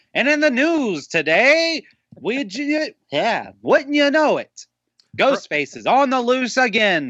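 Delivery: very high, swooping thirties radio newsman voice. Introducing today's news, the host does a 1930s-40s old-timey voice. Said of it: "where everyone talked like this".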